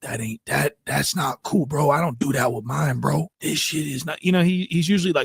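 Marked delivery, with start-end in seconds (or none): 0.0-4.2 mock frightened, whimpery, scared little voice. Mocking a caller on a show who sounds scared: imitating Wack Three Fingers whimpering. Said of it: "He sounds so whimpery and so scared right now".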